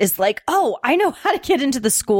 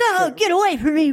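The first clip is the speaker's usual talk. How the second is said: badly overdubbed voice, pitched up; 9 semitones higher than usual. Recalling a film scene, quoting the mime: Suburban Commando mime bad dub voice. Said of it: "It's another like bad voice dub".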